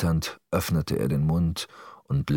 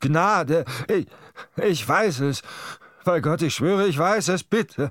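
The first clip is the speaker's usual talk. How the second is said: piercing, very high screaming cries, pleading tone; 12 semitones higher than usual. A chained prisoner in pain cries out to his captor, screaming for mercy. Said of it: "schrie der Gefangene und rüttelte an seinen Ketten".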